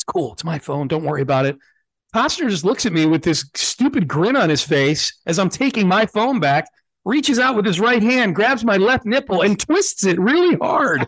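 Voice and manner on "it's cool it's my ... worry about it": whispered voice. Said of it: "and I whisper, like, off mic".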